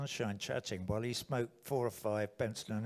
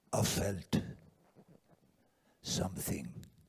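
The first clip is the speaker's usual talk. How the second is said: odd, weird put-on French accent; 4 semitones lower than usual. Speaker retelling what a Catalan man said to him; weird French accent. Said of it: "I said it in a weird French accent".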